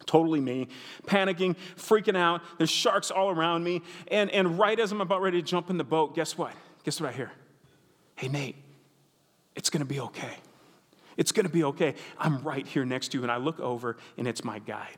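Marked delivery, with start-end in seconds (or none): 8.1-13.2 whispered voice. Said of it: "the guide kept whispering to me".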